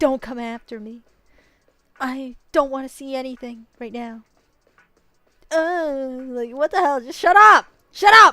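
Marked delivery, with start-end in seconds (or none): 0.0-4.2 mock mysterious dramatic tone, higher. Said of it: "weird, mysterious message".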